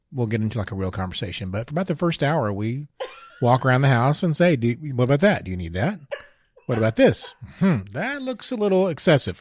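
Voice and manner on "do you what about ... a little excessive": put-on sarcastic, scrutinizing tone with swooping sing-song pitch. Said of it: "he's joking".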